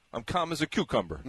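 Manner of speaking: put-on sarcastic Brooklyn accent. Retelling a Brooklyn native's reply to a greeting: imitating Bonomo's sarcastic Brooklyn accent. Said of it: "kind of sarcastically in that Brooklyn accent".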